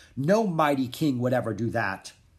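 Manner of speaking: usual speaking voice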